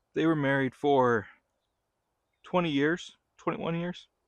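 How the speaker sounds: holding back tears. Recounting their parents' divorce to viewers, holding back tears. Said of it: "try not to cry in front of the world here".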